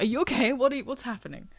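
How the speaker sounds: high-pitched dog voice. Voicing the dog reacting to the owner getting emotional: voicing the dog. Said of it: "my dog is like".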